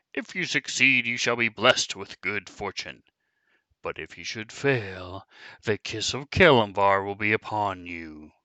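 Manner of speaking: booming voice. Speaker voices a disembodied voice setting the traveler three riddles, booming. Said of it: "A disembodied voice booms all around you".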